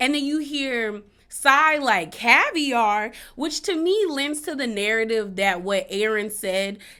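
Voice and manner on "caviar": judgy, disapproving inflection, loud on "caviar". Retelling how Sai reacted to the food plan: imitating a disapproving tone. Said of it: "the inflections in Sai's voice when she says certain things gives a tone of".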